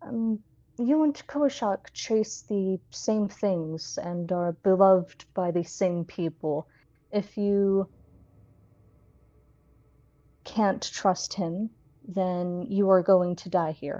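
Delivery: quieted, hushed voice. Voicing a character who quiets himself before answering the player: quieted, hushed voice. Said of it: "he'll kind of quiet himself".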